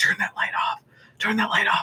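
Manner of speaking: soft, breathy whisper under the breath. Retelling a film scene where Mike whispers at night: imitating Mike whispering. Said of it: "you hear Mike, like, whispering".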